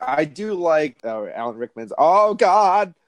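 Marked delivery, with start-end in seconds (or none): 2.0-2.9 high, loud put-on American accent. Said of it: "Yeah, great accent".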